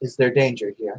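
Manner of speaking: perfectly composed, very calm, even tone. Role-playing as Miriam, asking the dog a question, very calm. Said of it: "will just ask very calmly".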